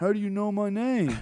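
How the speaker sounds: very high, weird, odd squeaky voice. Retelling how a guy answered whenever he greeted him, imitating Beanie's weird voice. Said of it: "he had a fucking weird voice like that".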